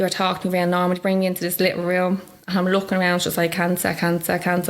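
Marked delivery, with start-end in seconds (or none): none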